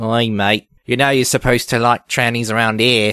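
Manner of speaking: put-on Australian accent, "oi mate" style. Voicing a hypothetical monitor's follow-up, the speaker slips into an Australian-sounding accent. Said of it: "that sounds Australian".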